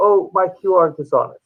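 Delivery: ordinary delivery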